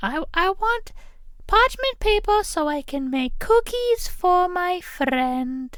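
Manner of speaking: very high, dumb, silly put-on girl voice. Retelling what a girl said to the speaker, in a stupid put-on girl voice. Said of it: "doing that voice or thinking about that girl with this stupid ass voice".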